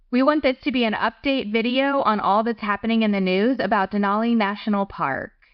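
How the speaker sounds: ordinary delivery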